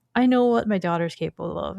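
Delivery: plain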